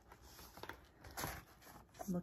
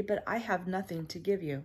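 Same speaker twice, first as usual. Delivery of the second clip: ordinary delivery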